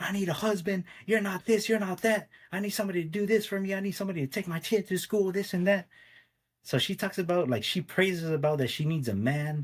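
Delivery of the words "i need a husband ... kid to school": put-on screaming yell, higher. Retelling what she would always scream: imitating her screaming. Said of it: "she would always scream at me".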